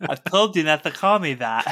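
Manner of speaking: slow speech with the tongue sticking out. Imitating a voice actor who talks with tongue stuck out. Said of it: "has to like stick their tongue out as they're talking".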